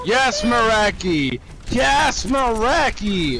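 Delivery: high, drawn-out excited cheer.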